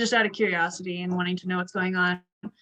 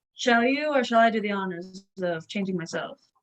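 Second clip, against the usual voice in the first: ordinary talk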